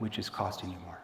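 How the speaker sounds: low, very soft, worried, concerned tone. Ending a question about what costs more by shifting into a low concerned tone. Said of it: "See the shift down? Why would I shift down to that concern tone at the end?".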